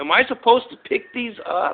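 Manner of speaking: very high-pitched yell called across a distance. Retelling calling across the street about candy bars: imitating own yell. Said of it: "I yelled over at Darlene Dunham saying".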